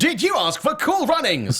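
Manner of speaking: high automated phone-menu announcer voice. Acting out a phone system that mishears a request: Moviefone automated voice. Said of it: "Movie Phone".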